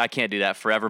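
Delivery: ordinary talk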